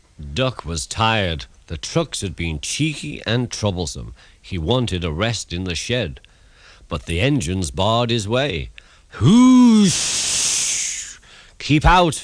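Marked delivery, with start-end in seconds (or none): 9.2-12.3 very high pitched, hissed delivery. The narrator reads the engines barring Duck from the shed, hissing. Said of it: "they hissed".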